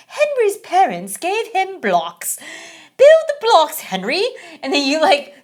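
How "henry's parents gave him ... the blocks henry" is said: put-on sing-song, high-pitched storybook British narrator accent. Describing a game's storyteller giving a task: imitating a british narrator. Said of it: "this, like, British guy tells you a story".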